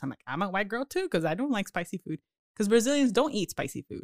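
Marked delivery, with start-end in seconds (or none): 0.3-2.2 mild, put-on sarcastic tone, nothing extreme. Retelling a reply to people who say they can't do spicy food: imitating own sarcastic reply. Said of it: "So I can be sarcastic like that".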